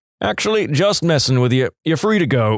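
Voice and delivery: ordinary talk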